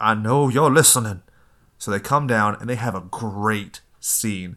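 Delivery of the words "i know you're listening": loud, called-out voice. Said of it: "And Mama's like".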